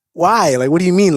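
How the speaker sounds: usual speaking voice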